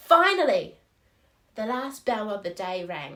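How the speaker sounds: very loud, emphatic, weighty "finally" with pause after. Showing the effect of a comma after the opening word: pause after finally. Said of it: "put a comma after the word finally to make finally sound strong and important".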